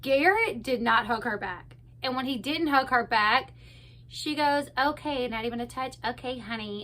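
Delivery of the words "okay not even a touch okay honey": soft, patronising, condescending tone. Recapping a show, quoting a woman when Garrett won't hug her back: mock-condescending tone. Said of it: "in a very condescending tone".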